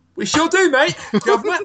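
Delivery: exaggerated fake British accent, pitched high. Podcast host joking with a guest about hating each other, in a fake British accent. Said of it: "Now that's a fake British accent".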